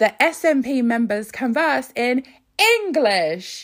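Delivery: shouting. Reading aloud an email sent to a member of parliament: yelling capitalised words. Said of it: "I'm yelling 'cause they capitalised it".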